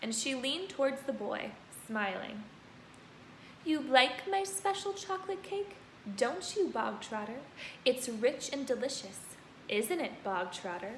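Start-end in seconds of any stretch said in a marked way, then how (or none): 3.6-11.0 suddenly gentle, soft, quiet, hushed friendly voice. The Trunchbull leans toward the boy Bogtrotter and speaks, softer, quieter, friendly voice. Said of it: "her voice was suddenly softer, quieter, more friendly".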